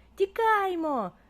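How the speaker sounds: piercing, high-pitched, loud shouting cry. Zavr, seeing a giant dinosaur coming at them, shouts to his friend. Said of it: "крикнув Завр".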